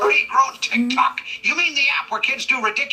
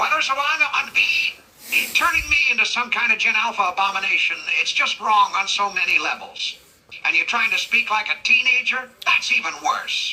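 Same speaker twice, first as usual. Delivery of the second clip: plain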